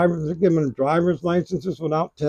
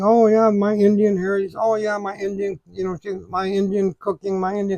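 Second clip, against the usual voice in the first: mocking put-on politician voice, higher; 3 semitones higher than usual. Retelling what Kamala Harris said on TV: mocking Kamala Harris impression. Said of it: "she switches accents".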